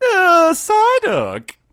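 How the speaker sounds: very high, very loud, swooping wailing cry. Describing a Psyduck appearing in a game: Psyduck voice. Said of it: "And the Psyduck spawns, it's just like".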